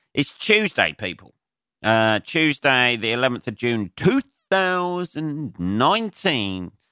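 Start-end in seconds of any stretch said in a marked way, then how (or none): 2.2-6.6 boxing ring announcer style delivery. Giving the date at the start of an episode: boxing announcer delivery. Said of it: "like I'm announcing a boxing fight".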